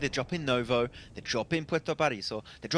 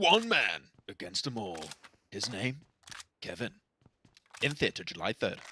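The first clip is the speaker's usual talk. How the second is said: deep, slow, epic movie trailer narrator voice; 5 semitones lower than usual. Performing a made-up movie trailer when asked to do the voice: movie trailer voice. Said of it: "now you need to do the, the voice".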